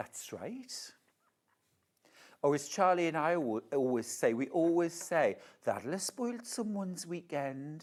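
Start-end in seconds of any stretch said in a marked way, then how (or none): 5.6-7.8 soft, gentle Geordie accent. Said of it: "That sounded a bit like [name]".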